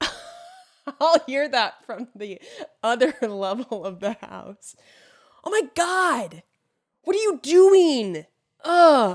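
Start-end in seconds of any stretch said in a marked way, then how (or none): 5.4-8.3 high, loud, slow exasperated yell. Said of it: "Chad will yell".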